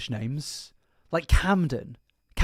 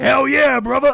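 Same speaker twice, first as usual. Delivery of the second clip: fake American accent, loud, high, belted; 9 semitones higher, 7 dB louder than usual. Recalling a show host's regular impression, in a fake Alex Jones accent. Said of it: "I like that fake accent he's doing".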